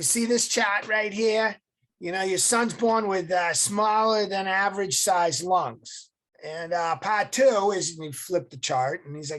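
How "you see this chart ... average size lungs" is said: put-on Massachusetts accent, much higher, louder. Retelling a man showing a chart about the speaker's son, in a Massachusetts accent. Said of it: "in this Massachusetts accent".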